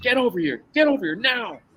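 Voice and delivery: play-acted cop shouting. Retelling how officers shouted them over: imitating police screaming. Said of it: "screaming at us to".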